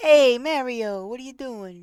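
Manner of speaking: New Yorker's way of talking. Speaker showing how New Yorkers say the name, in a New York accent. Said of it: "but in New York".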